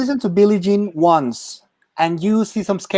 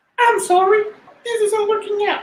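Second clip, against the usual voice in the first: very high sock-puppet character voice; 12 semitones higher than usual. Breaking up with someone through a sock puppet, in a sock puppet voice. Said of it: "I would like to hear it in your own voice".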